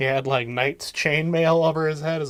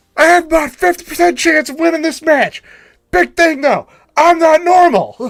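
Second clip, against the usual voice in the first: high bellow at full blast; 13 semitones higher, 11 dB louder than usual. Talking about a wrestling match, the speaker launches into a loud Scott Steiner impression. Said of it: "in between my loud ass voice".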